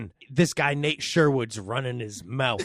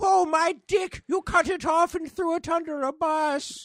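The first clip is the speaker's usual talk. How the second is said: very high-pitched comic character voice. Riffing with others on a new Happy Madison production, do a good Adam Sandler impression. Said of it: "You did a good impression".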